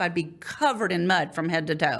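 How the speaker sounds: ordinary delivery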